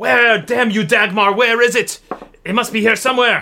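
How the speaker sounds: high-pitched shouting in a character voice. A game narrator voices Etelka as she continues searching, Etelka shouting. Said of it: "she's shouting".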